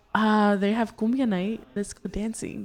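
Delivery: plain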